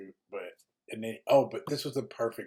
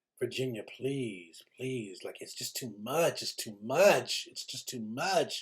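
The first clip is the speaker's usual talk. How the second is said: man's put-on southern American accent. Retelling a night out, the speaker quotes a man pleading with Virginia: imitating Max's southern accent. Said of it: "he had this southern accent".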